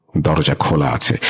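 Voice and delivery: ordinary delivery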